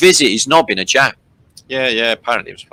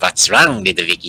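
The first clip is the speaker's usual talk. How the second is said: put-on Mexican accent; 5 semitones lower than usual. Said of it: "That's Mexican".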